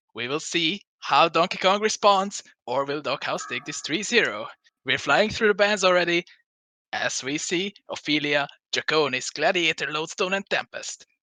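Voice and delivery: put-on esports play-by-play caster voice. Opening the match cast while imitating the co-caster: imitating Beans. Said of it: "two times now you're trying to imitate me?".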